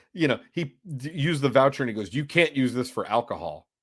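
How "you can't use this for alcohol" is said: put-on snide tone, lower. Retelling what a man said when the speaker paid with a voucher, mock-snide. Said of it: "and then he snidely".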